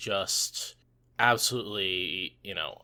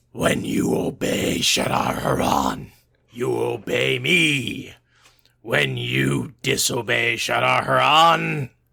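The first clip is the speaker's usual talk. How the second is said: booming, slow, rough voice; 10 dB louder than usual. Reading an all-caps line from the book aloud in the Great Lord voice. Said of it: "the Great Lord voice and read that all caps line".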